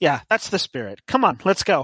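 oblivious tone, taking everything literally. Voicing a self-proclaimed expert who lectures a young lady about spirits: voicing a paranormal investigator. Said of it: "the paranormal investigator's".

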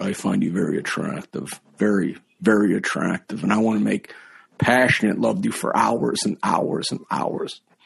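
put-on, rough, creaky, seductive film-star voice. Retelling doing the impression for Dustin Hoffman in his ear: Dustin Hoffman voice. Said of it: "my voice".

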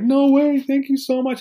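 very high, freaked-out scream of disbelief. Retelling a girl's reaction to money at her lemonade table, retelling her screaming. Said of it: "just like literally screaming".

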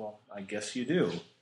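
bone-dry, matter-of-fact deadpan, no joking. Retelling a card game story where a player answers his opponent, acting out a deadpan reply. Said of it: "And Eirik deadpans".

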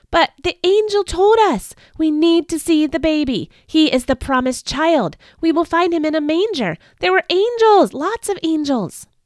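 high, clamoring, protesting shouts and cries. An impatient group answers a woman sending them away, shouting in protest. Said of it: "broke out in shouts of protest".

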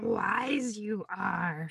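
small, sage-like creature voice, wise drawn out. Addressing listeners who have waited since last week, slipping into a Yoda voice. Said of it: "I practice my Yoda voice a lot".

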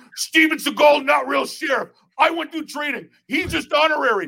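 shrill, worked-up, very high, hard yelling. Retelling how Steven Seagal yelled at the speaker: imitating Steven Seagal yelling. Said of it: "And he's like yelling at me like that".

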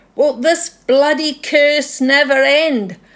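Scottish Highland-style shout. Retelling a dream of a Highlander shaking his fists: imitating a Highlander shouting. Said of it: "he's shouting".

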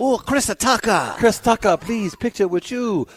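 very high, slow, put-on Mexican accent. Retelling fans in Colombia asking for a picture, in a Mexican accent. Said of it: "That's my Mexican accent".

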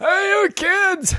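put-on very high-pitched, cranky, crotchety old-man voice. Acting out a game idea about a crotchety old man: crotchety old man. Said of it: "some old crotchety".

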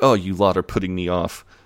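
normal talking voice

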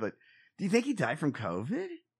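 broken up by laughter, swooping pitch. Asking another person a question, laughing. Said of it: "I don't know why I'm laughing".

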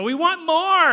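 put-on very high, very loud, drawn-out whining toddler scream. Likening the complaining Israelites to toddlers on a road trip, imitating screaming toddlers. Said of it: "They're screaming at you".

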